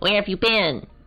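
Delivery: put-on high, nasal, nerdy bookish girl voice. Like an awkward scientist asking a colleague a question, earnest and slightly nasal, a little too precise. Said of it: "my voice for this girl initially was that of like a kind of like a valley girl".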